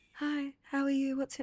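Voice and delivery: reserved, mild, understated delivery. Retelling a first date through a wall: Demola speaking really quietly. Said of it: "So he was really quiet".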